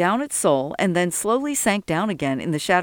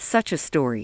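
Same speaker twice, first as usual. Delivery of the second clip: ordinary delivery, nothing marked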